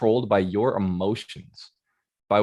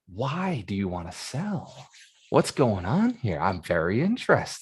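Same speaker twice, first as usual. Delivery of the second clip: keenly interested, eager, animated curiosity; 4 dB quieter than usual. Asking a house seller why they want to sell: eager, interested tone. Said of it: "with interest, with desire to learn about the person in front of you, with some eagerness".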